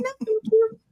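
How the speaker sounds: little squeaky voice, very high pitched. Retelling what a woman shorter than the speaker said, in a little squeaky voice. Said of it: "Little squeaky little voice".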